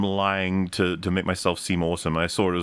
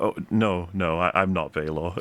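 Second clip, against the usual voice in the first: put-on genuine, guileless, earnest tone, slow. Discussing a scene, quoting Dunk's reply to a sarcastic man: imitating Dunk's genuine denial. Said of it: "Dunk being so genuine is like".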